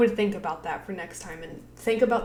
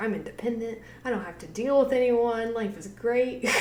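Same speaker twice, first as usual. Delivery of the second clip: acted-out carefree, very happy voice; 2 semitones higher, 4 dB quieter than usual. Speaker acts out what a woman might say if she's really happy, mock-happy. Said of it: "if she's really happy about it".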